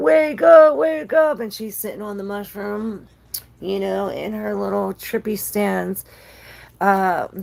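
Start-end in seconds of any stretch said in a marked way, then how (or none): 0.0-1.4 very high, very loud, drawn-out scream. During a tarot card reading, imitating someone screaming. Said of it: "him screaming like".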